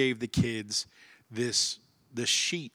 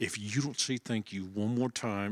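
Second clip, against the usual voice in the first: acted-out talking through gritted, clenched teeth. An angry parent, having pulled the kids over, acting out gritted-teeth talk. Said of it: "you grit your teeth and you're talking through your teeth".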